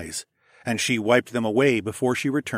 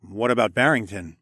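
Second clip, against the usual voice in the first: usual speaking voice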